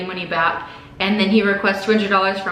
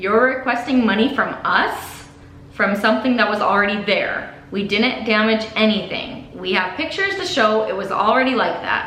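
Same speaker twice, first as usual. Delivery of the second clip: ordinary talk, nothing marked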